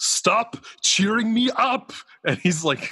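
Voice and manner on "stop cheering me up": put-on furious delivery, very high, slow, drawn out. Retelling a favorite movie line where the character is slammed against a car: imitating a furious movie line. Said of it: "but he's so mad".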